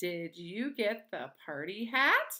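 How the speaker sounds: pitch rises at the end on hat. Teacher showing children how to say a question sentence: rising question intonation. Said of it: "we need to make our voice go up at the end".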